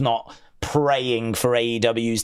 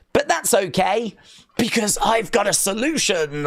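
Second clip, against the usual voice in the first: apologetic then comforting tone, higher pitch; 9 semitones higher than usual. Imagining Bray's Funhouse promo after a loss: Bray Wyatt, mock sorry. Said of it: "looking down, like, really sorry".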